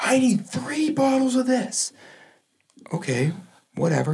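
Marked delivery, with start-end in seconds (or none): 0.0-1.9 shrill, very high-pitched screaming yell. Retelling a customer calling from across the street: imitating a woman screaming. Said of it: "She's screaming at us".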